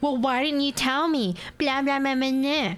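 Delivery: play-acted, irate, angry shouting. Recounting a caller who yelled at the speaker over a fine, imitating someone yelling. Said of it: "He proceeds to yell at me saying".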